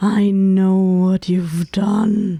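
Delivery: ominous, looming throaty voice, extra loud. Showing how a character might deliver the line, in a low throaty voice. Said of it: "like a very low and like throaty voice and just like give it more volume".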